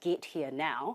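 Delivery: ordinary delivery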